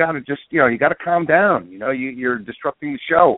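ordinary delivery

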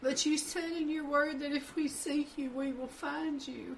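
high, tearful voice on the edge of crying. Speaker prays aloud to the Lord about his word; on the verge of crying. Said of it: "I'm going to cry".

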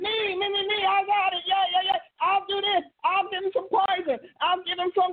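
high-pitched, eager mock yelling.

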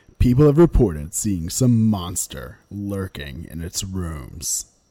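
low, dramatic movie-trailer narrator voice. Reading a documentary's trailer aloud on request, in a dramatic movie trailer voice. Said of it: "Do the voice".

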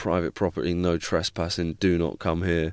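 plain

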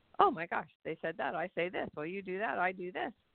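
plain

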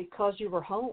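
fast, flat, toneless deadpan monotone. Retelling a film character's reply to another character's question, very monotone. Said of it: "she just very monotonely says".

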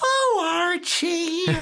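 very high sitcom housewife voice, exclaiming. Imitating the wife character answering Archie: Edith Bunker impression. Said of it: "Edith go".

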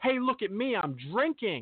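acted-out showy, attention-seeking screaming cry. Mocking people who show off their drinking: imitating someone screaming. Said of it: "you just screaming".

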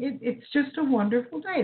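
words bubbling with laughter. Wrapping up after the last caller, laughing while talking. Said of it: "That's why I'm laughing".

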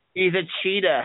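put-on Boston accent. Talking about the Patriots' quarterback, saying the line in a Boston accent. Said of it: "that's the Boston accent".

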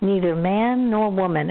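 ordinary talk, nothing marked

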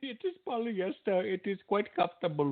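put-on Indian accent. A bot calling itself a big fan describes a show hat, put-on indian accent. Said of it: "your best Indian voice".

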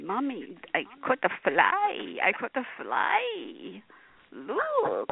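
eerie, creepy, very slow and deliberate drawl. Retelling how a guest said he caught a fly: imitating a guest's creepy voice. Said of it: "this was how he did it".

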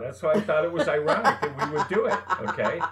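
high, loud talk with laughing through the words.

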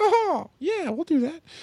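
a strained, badly squeaked voice, very high pitched. Imagining the mouse suddenly agreeing, in a horrible Mickey Mouse impression. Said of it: "like the horriblest Mickey Mouse impression ever".

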